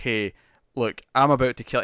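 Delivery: ordinary talk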